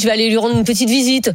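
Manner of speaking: usual speaking voice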